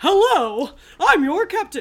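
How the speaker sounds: loud, booming, high-pitched trailer announcer voice. Host welcomes everyone to the show as captain, in a Moviefone guy voice. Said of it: "that sounded like the movie phone guy".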